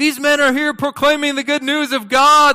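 shrill very high shouting. Retelling how a slave girl followed preachers: imitating a girl yelling.

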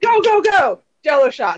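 high, long, stretched-out, acted scream. Retelling arriving where people handed out jell-o shots: imitating own screaming. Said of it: "I'm screaming".

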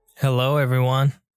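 creepy, eerie-sounding voice. Greeting listeners at the start of the show: creepy-sounding greeting. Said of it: "like, really creepy".

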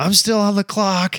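very high, piercing shout. Telling a story about the dealership owner, the speaker repeats what they yelled: retelling a yell. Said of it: "and I yelled".

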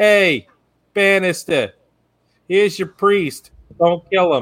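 put-on New York accent. Retelling a scene, the speaker quotes a character's first line in a hard new york accent. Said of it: "the hardest new york accent you can".

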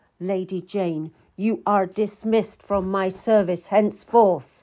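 ordinary delivery

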